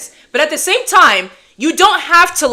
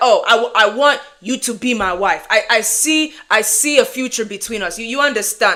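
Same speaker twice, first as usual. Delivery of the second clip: direct, blunt, earnest, halting delivery; 3 semitones lower, 4 dB quieter than usual. Retelling what men say on day one: imitating a man's direct pickup lines. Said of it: "they be like".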